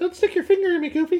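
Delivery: squeaky voice pitched way up high. Doing a voice bit with friends, speaking to Goofy, in a Mickey Mouse voice. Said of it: "that's like Mickey Mouse".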